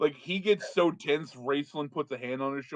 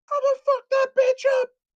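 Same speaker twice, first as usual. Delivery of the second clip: shrieking scream, very high-pitched and very loud; 10 dB louder than usual. Narrating to players, voicing a woman heard in the distance, screaming female voice. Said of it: "a female voice screaming".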